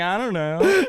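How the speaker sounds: guilty kid's fake innocence, evasive tone. Mimicking a guilty kid denying the missing cookies: imitating a kid caught with missing cookies. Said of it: "missing cookies energy".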